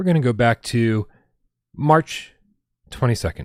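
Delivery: really slow, loud, halting, drawn out word by word. Going back to a date on a sluggish backup hard drive, speaking really slowly. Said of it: "I'm saying it really slow".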